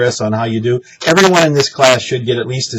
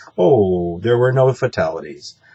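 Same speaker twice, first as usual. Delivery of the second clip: let-down, disappointed, sorry-sounding tone; 3 semitones lower than usual. Showing how not to report no fatalities, disappointed tone. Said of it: "Don't sound disappointed".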